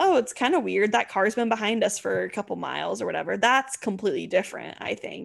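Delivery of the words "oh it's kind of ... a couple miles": ordinary delivery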